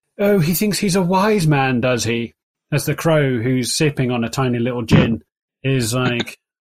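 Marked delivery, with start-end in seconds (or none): 0.2-2.3 very posh, refined, well-spoken upper-crust voice. A crow sipping a tiny gin speaks up: very posh, well-spoken voice. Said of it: "a very posh, well-spoken voice".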